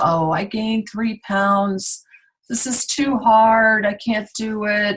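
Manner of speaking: upset, overwrought, very emotional high voice. Speaker role-plays a check-in call where Roxanne reports her results: imitating Roxanne, very emotional. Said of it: "very emotional and".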